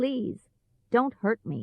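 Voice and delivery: small, soft, quiet little voice. Reading a story, the old man answers the angry Tin Man, quiet little voice. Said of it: "said the old man in a quiet little voice".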